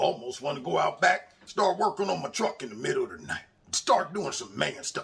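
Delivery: put-on, fake manly macho voice. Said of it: "I gotta talk in my man voice".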